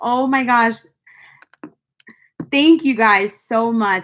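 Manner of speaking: on the verge of tears. Thanking viewers live after reaching eighty k, on the verge of tears. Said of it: "I'm not gonna cry on this live".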